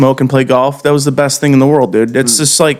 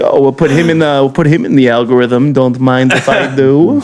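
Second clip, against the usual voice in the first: put-on mixed German, Italian and Yiddish-style accent.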